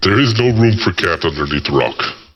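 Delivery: very deep, booming character voice. Voicing Brenoir at the rock, with a voice filter: Brenoir voice. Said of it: "that was a good Brenoir impersonation".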